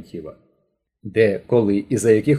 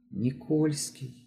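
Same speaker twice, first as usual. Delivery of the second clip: hushed, very soft, almost inaudible voice; 5 semitones higher, 12 dB quieter than usual. Asked who the man is, the questioned woman names him, barely audible. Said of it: "ледве чутно промовила Терентьєва".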